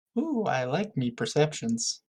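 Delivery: hushed, low, sardonic sing-song under the breath. At a D and D game, asked for a perception check, a player answers: sarcastic. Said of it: "He says sarcastically".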